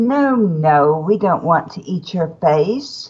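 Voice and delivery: imitated English accent. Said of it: "in an awesome English accent".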